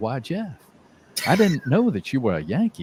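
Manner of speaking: put-on sweet, sugary, gentle little old lady voice. Retelling a booster who gently grabbed the speaker's arm, imitating a sweet old lady. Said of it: "she comes up to me and just sweetly".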